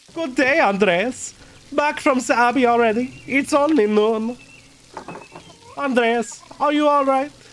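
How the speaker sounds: put-on German voice. Reading a game character's lines aloud: put-on German accent. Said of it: "I was doing a fucking German voice for".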